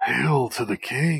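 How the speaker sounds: put-on robot villain voice. Asked which voice he uses when playing with his toys, he does the Shockwave voice. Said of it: "what's that Shockwave voice you always use".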